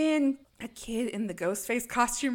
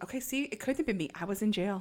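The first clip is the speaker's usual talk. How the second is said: normal talking voice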